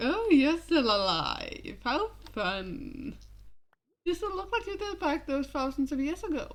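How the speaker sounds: acted flirty, cocky, swaggering tease. A speaker acts out a character greeting people from his past, flirtatious. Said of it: "And then flirtatious when he deals with people from his past".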